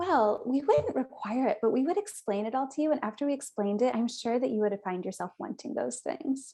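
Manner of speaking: condescending, talking-down, know-it-all tone. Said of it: "That's so condescending".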